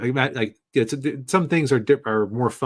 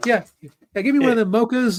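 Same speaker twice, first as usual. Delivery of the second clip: very high chatter, rattled off fast; 12 semitones higher, 3 dB louder than usual. Imagining ordering at a Starbucks counter: Chris Tucker impression. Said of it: "he comes in talking like he does in any of his movies".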